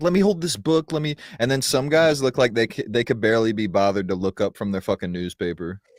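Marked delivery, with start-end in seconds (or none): 0.0-1.2 put-on keen, eager, into-it voice, pitched up. Acting out an eager man in a video: imitating an excited man.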